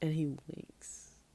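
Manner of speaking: plain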